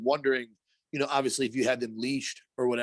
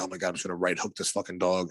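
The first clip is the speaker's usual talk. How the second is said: low, irritated, annoyed grumbling mumble; 6 semitones lower than usual.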